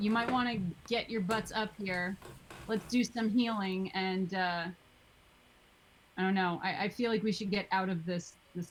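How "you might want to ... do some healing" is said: ordinary talk, nothing marked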